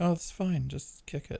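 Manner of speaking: put-on, high, campy voice.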